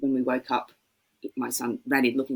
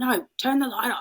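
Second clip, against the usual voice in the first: put-on cranky, raised voice, much higher pitch; 11 semitones higher than usual. Retelling telling him at 4:45 to turn the light off, imitating own cranky voice. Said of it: "And I started like my cranky".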